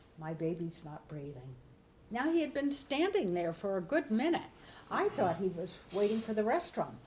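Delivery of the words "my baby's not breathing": very soft, quiet, hushed voice. The speaker retells what a waiting man told him: very soft voice. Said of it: "he said in a very soft voice".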